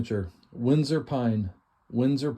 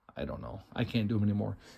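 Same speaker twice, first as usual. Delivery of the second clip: ordinary talk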